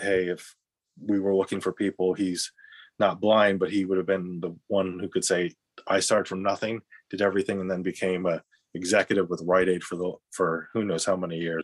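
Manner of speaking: plain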